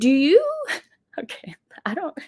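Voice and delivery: giggly talk through laughter, high and swooping. Talking about Oprah and Meghan Markle, laughing while talking. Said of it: "Sorry, I can't stop laughing".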